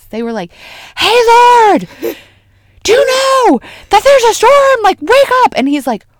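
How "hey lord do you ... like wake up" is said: shrill, very loud, high, frantic panicked yell. Speaker acts out people in a storm waking their lord, imitating people yelling. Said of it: "this yelling thing because the storm is so loud".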